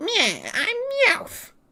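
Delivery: very high cartoon cat voice with swooping pitch. Explaining the English dub, the speaker imitates the villain character, Meowth voice. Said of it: "Meowth is like".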